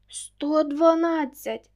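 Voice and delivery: loud, sudden exclamation. A woman pretends to count the police and answers the robbers; exclaiming. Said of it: "вигукнула Марта".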